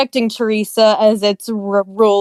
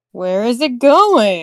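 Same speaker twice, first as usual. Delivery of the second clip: animated, swooping cartoon small-town mayor voice. Asking where the sinking rock is going: South Park mayor voice. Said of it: "you sounded so much like the mayor".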